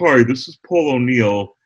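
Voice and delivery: slowed-down, dragging, warped tape voice. Retelling a taxi recording as the tape slowed down: slowed-down tape voice of Paul O'Neill. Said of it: "the tape started slowing down".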